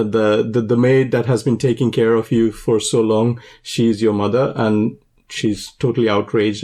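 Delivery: normal talking voice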